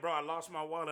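ordinary delivery

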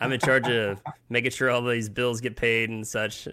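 ordinary delivery

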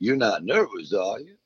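high, slow, laughing, teasing tone. Retelling what a man said, laughing at his backstage nerves: retelling a laughing tease. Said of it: "started laughing".

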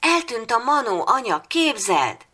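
joyful, happy shout, very high-pitched. A boy wakes up and calls out to his mother, shouting happily. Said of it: "Kiáltotta boldogan Áron".

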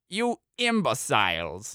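contemptuous sneer with swooping pitch. Pointing a pistol at the frozen companions, sneering. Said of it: "Denise sneered".

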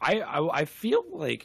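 voice cracking. Answering a question about a game scene, the speaker's voice cracking. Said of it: "my voice cracked".

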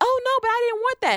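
very high, put-on screaming voice. Imitating a hypothetical woman protesting afterward: imitating someone screaming.

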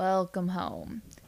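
slow drawl, vowels stretched long. Reading a story, a character welcomes the arriving guests home, drawled. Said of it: "he drawled".

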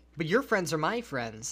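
normal talking voice

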